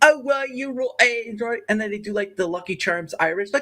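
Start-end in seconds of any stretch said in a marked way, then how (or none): 0.0-1.6 high, put-on Cockney accent done American-style. Mocking how americans do accents: imitating americans doing cockney. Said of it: "Americans do the Cockney accent".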